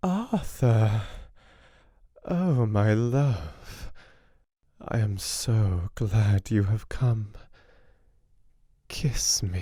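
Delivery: languid, voluptuous, soft murmur, very slow. Narrator reading a half-waking woman's words to Arthur: soft, voluptuous voice. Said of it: "in a soft, voluptuous voice".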